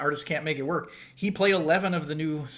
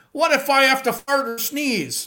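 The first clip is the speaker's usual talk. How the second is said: put-on very high drunken holler; 10 semitones higher, 7 dB louder than usual. Retelling a drunk guy at a show shouting at an usher: imitating a drunk man yelling. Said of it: "this drunk guy in Milwaukee, yells at the usher".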